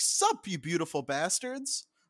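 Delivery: pitch swinging widely all over the words. Comparing two versions of a greeting, imitating Philip DeFranco's old greeting. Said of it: "he used to be like".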